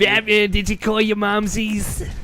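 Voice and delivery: put-on old woman voice. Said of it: "can you imagine if Harley was, was Bruflovsky".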